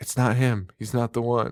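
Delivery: mock whispering. Retelling a film scene where the victim on a gurney speaks: imitating someone whispering. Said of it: "She's just whispering it".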